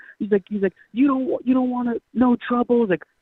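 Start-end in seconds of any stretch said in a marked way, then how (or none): 0.9-2.8 put-on high-pitched drunken hollering. Retelling how a drunk local drove up yelling at them: imitating a drunk local yelling. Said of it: "he's just yelling at us".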